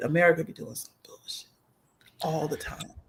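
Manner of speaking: hushed whisper. Talking to listeners and afraid of going to jail, the speaker is whispering. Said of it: "I'm whispering".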